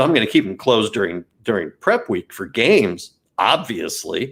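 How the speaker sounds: ordinary delivery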